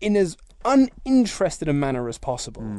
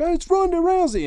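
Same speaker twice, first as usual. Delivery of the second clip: mock screaming, pitched very high; 12 semitones higher, 3 dB louder than usual. Describing a crowd going insane at a wrestler's debut, retelling a scream. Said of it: "Michael Cole's screaming".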